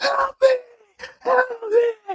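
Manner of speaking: very high, screamed cries. Retelling a stranger's cries on a staircase: imitating someone screaming for help. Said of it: "he's screaming and screaming for help".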